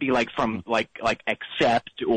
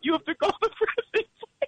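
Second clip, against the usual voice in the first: very high, put-on weepy, sobbing voice. Comedy bit, pretending to be distraught: fake crying voice. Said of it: "I'm just crying because I'm so distraught".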